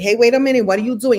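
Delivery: fired off loud and quick. Recalling imitating people from the Brooklyn streets to make kids laugh: Puerto Rican girl voice. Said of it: "I would do the Puerto Rican girl say".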